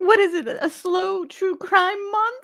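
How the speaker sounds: very high, slow speech breaking into laughter. Reacting to a clip about a slow true crime month, laughing while talking. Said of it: "I can't help but laugh there".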